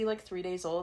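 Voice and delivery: ordinary talk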